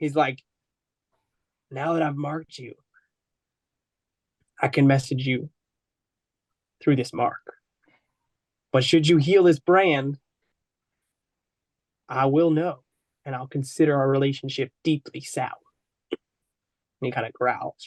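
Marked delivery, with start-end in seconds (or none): 1.7-15.5 whispered close, as if into the ear. Narrator voices a character speaking into a player's ear, whispering into your ear. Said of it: "whispers as he whispers into your ear".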